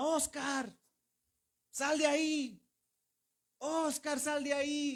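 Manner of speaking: mock shout, slow and dragged out. Retelling a professor shouting a name at a tomb, imitating a professor shouting. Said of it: "y él gritaba".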